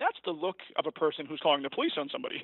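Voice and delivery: plain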